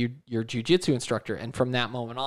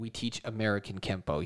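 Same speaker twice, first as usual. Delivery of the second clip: super condescending, superior, talking-down tone; 2 semitones lower, 7 dB quieter than usual. Retelling how a martial arts instructor answered a polite question: imitating a condescending instructor. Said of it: "super condescending".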